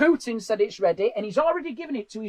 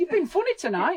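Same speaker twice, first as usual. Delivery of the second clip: acted, truly surprised sound, pitched up; 8 semitones higher than usual. Speaker echoing his mum's compliment back at her, imitating a surprised compliment. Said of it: "in a way that you're surprised".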